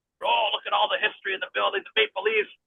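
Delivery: excited, starstruck fan gush, high and swooping. Retelling a skit where Edge marks out over the building's history: imitating Edge marking out. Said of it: "the Edge was marking out".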